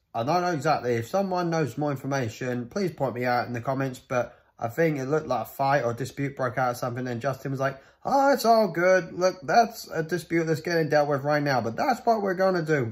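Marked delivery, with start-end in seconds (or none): 8.0-12.9 put-on poor American accent, pitched up higher. Retelling what Justin said when the show was stopped: bad American accent imitating Justin. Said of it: "excuse my bad American accent".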